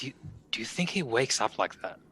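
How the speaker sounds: hushed, breathy, barely voiced whisper. Whispering to a companion in character while another addresses them: whispering. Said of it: "whispering to him".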